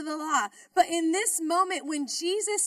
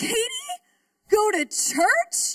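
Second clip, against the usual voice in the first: put-on stunned, incredulous, high swooping tone; 6 semitones higher, 4 dB louder than usual. Retelling her roommate's reaction to a church invitation, mimicking shocked disbelief. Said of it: "Kind of like in shock".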